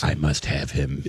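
eerie, creepy, hushed put-on half-whisper. Voicing a basketball boss set on signing a player: creepy put-on half-whisper. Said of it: "why is he whisper guy now?".

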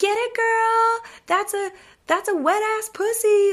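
put-on yelling. Speaker retells strippers catcalling a woman on cam, retelling a yelled catcall. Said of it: "catcalling her and like yelling at her like".

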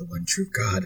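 mock muttering way under breath. Retelling a scene, he answers her question with a mutter under breath. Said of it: "under his breath, way under his breath".

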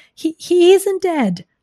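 high, loud hollering voice. A man answers the loudspeaker about his fainted pig, hollering. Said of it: "hollered Zuckerman".

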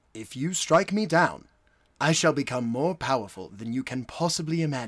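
poorly done, rough put-on British accent. Doing a Ben Kenobi quote in a British accent. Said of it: "It's Alec Guinness, so he's got a British accent".

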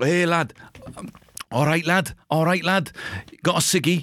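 put-on Liverpool accent, very high and slow. Touring British regional accents, now doing Liverpool, in a put-on Scouse accent.

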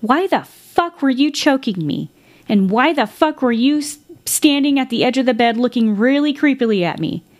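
put-on furious cursing outburst, high-pitched and angry. Retelling a man who came to angry and yelled at a woman, retelling an angry yell. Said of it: "he was yelling at her".

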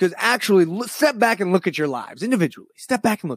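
fierce, intense, aggressive, impassioned delivery. Criticising someone's timing as disrespectful, aggressive but not angry. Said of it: "This is aggressive, but it's not angry".

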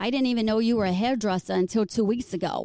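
fast put-on Boston accent. Retelling what Don said when they finally got together, imitating Don in Boston accent. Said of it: "Is that your Boston accent?".

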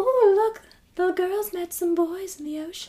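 put-on sweet, cute, high British accent. Quoting her grandma, who was British, in a cute little British accent. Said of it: "she had this cute little accent".

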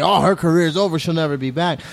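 ordinary delivery

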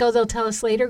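ordinary talk, nothing marked

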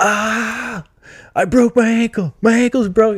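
very high, pained scream with a long "ah". Retelling what he screamed right after the ankle injury, imitating someone screaming. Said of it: "then starts screaming".

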